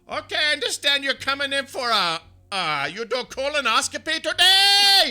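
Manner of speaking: very high-pitched, very loud, shrill yelling. Act out how she starts talking as she gets toward the door, imitating her loud yelling. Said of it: "she's yelling that loud".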